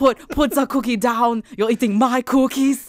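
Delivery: high, loud yell. Joining in on a quoted movie line, imitating Arnold Schwarzenegger yelling. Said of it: "Arnold yelling".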